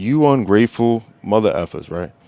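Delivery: mock-authoritative, commanding tone, not yelling. Retelling what their squad leader said to the complaining squad, imitating an authoritative voice. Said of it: "with a very like authoritarian voice".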